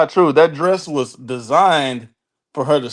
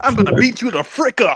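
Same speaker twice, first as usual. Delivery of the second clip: corny nineties schoolyard bully voice, higher; 8 semitones higher than usual. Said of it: "sound like a nineties bully".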